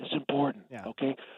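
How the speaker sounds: hushed, breath-only half-whispered stage whisper. Stressing to a host that something is important: half-whispering. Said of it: "That's why I'm talking in a whisper".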